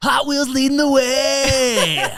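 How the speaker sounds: very high, very loud announcer voice, words stretched way out. Recalling the Hot Wheels commercial they voiced at twelve, in Hot Wheels commercial voice. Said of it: "I did the voice".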